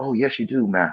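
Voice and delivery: docile, yielding, meek and passive yes-man voice. Retelling an old 1960s video clip: imitating a passive man. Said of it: "he was really passive".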